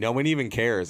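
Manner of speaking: ordinary talk, nothing marked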